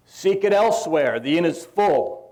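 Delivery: imitated loud, brash voice. Retelling a pageant innkeeper's line to Joseph: Wallace's big brash voice. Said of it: "In a big, brash voice that he could muster".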